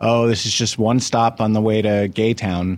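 ordinary talk

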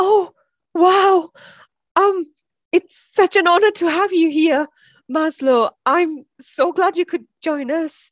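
nervous. Playing a podcast host welcoming a dead guest, sounding nervous. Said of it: "Sorry, I'm just nervous".

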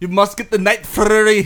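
put-on Scottish accent. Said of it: "that's how they talk, for real".

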